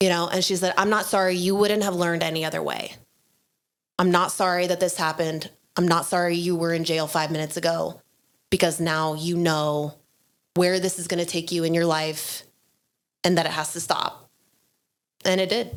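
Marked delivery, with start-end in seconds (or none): 0.8-14.3 put-on serious, steady, stable voice. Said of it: "in the most serious, uh, and, and stable voice".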